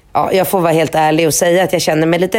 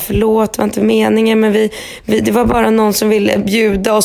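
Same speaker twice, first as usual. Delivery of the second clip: put-on downcast, sad, apologetic-sounding tone; 4 semitones higher than usual. Retelling how he got sad and apologized, imitating someone sounding sad. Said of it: "blir han så här ledsen och säger".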